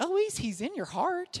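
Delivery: put-on small, high three-year-old toddler voice. At bedtime, a three-year-old chimes in to another child, Olive's three-year-old voice. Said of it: "in her three-year-old voice".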